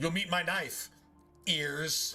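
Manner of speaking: terrible, worst, game put-on Irish accent. Imitating a video game character's line, in the worst fake Irish accent. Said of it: "talk in the worst accent I've ever heard".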